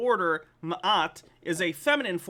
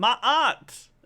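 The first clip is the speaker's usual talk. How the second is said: bad, exaggerated, loud put-on Cockney accent; 3 semitones higher, 6 dB louder than usual. Pronouncing the name Ma'at, in a bad Cockney accent. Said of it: "like with a bad Cockney accent".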